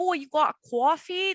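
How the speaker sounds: put-on Brooklyn accent. Talking about regional American accents, imitating a Brooklyn accent. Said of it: "Like they talk like that".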